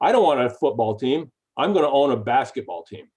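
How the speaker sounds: dead serious, flat earnest tone. Retelling a reply to a joke: imitating Josh, dead serious. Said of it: "he looked at me just as dead serious".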